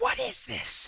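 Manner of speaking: piercing woman's shout, very high and very loud. Narrating a scene to listeners, voicing a woman above the pit: woman's voice, shouting. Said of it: "a woman's voice shout".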